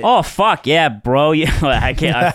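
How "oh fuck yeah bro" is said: attempted Canadian accent. Speaker describes a Canadian guy, trying a Canadian accent. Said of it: "was your Canadian?".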